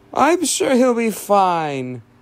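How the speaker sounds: weird, high, slow voice, "fine" stretched out. Reassuring a worried man that the injured one will be fine, in a weird voice. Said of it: "your voice sounds weird".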